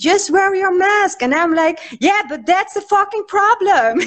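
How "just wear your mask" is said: mock shouted, yelled, commanding tone. Retelling how older people yelled at the speaker, imitating people yelling. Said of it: "they are yelling at me".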